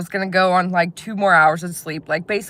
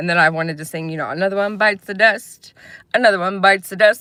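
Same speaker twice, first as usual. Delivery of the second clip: ordinary delivery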